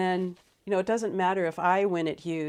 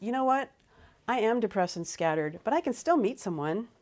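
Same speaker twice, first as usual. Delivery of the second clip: boastful, proud, triumphant tone; 4 semitones higher than usual. Retelling a client's reply in a role-play: imitating a proud tone. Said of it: "he said it with a lot of pride".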